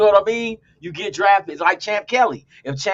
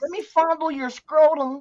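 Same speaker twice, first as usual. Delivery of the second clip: put-on high old woman character voice; 7 semitones higher than usual. Calling a young man over, in an old woman character voice. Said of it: "that's your next character voice right there".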